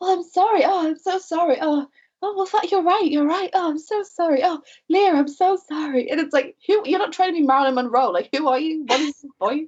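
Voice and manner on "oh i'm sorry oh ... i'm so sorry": super gentle, meek, high and slow voice. Mimicking a woman who, when berated, switches to a super soft, gentle voice. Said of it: "super soft, gentle voice".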